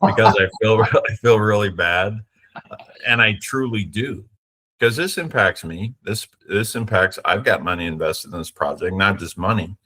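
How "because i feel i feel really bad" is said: words broken up by laughs throughout. Explaining a long project's struggles, fighting tears: laughing while talking. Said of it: "I know I'm laughing".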